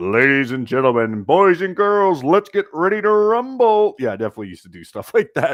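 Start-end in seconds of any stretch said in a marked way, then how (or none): 0.0-3.9 very high, loud boxing ring announcer voice. Speaker who used to do voiceover shows a boxing ring announcer voice. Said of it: "we could maybe do like the voice from um, boxing".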